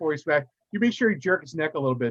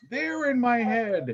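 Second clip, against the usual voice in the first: high, drawn-out, terrified, panicked scream; 8 semitones higher than usual. Voicing a frightened character as another approaches: screaming in panic. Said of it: "she's screaming".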